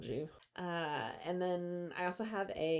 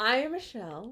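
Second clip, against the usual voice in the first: mock formal presenting voice, higher in pitch and louder; 6 semitones higher, 7 dB louder than usual. Introducing oneself at the start of the podcast: put-on presentation voice. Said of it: "That's my presentation voice".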